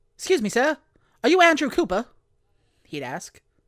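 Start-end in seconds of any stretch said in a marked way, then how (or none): 0.2-2.1 very high, loud, badly done newsboy voice. A shadowy figure on the street addresses the narrator in a bad Newsies-kid impersonation. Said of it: "a voice not unlike somebody doing a really bad impersonation of one of the kids from Disney's Newsies".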